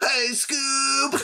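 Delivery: put-on voice pitched very high. Answering a request for an impression: Shaggy voice. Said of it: "Can you give us a Shaggy impression?".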